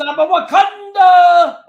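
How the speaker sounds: very high, very loud play-by-play announcer call. Show how the announcer for Pittsburgh would call it every time, imitating the Pittsburgh announcer's call. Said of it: "That's how the announcer for Pittsburgh would call it".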